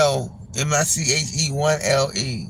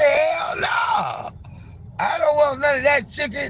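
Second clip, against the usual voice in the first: firm, loud shouting. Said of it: "I said".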